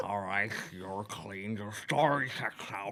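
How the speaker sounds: put-on drunken character voice. In an acted scene, Mr. Dink answers another character, drunk Mr. Dink voice. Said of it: "I love this voice".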